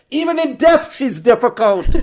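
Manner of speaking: shrill, very high-pitched, very loud yell. Retelling a family mishap, re-enacting the sister yelling back. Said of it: "my sister yells back".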